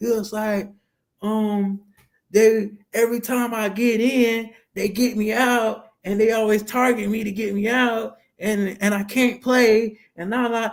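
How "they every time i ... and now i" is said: put-on upset child voice, higher. Retelling what a kid standing alone in the corner said: imitating an upset kid. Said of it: "Kinda look upset".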